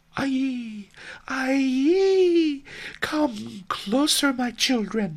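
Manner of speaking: put-on very high, rich, warm grandmother voice calling. An old woman calls the children closer to tell a tale: rich warm old woman's voice. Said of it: "an old woman whose voice was so rich and warm".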